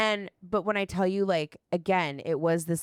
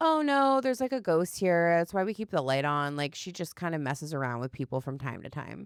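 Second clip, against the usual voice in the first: ordinary talk, nothing marked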